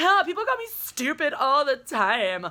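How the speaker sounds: put-on airheaded, grating, obnoxious Valley Girl voice. Speaker imitates a woman, in an obnoxious valley girl impression. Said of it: "my obnoxious Valley Girl impression".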